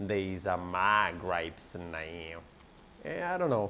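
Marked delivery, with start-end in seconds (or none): 0.0-2.4 put-on cartoon voice, deep, low and drawn out. Trying to say a funny line the way he says it, in Cleveland voice. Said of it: "I can do one more voice from Family Guy. It's that guy, Cleveland".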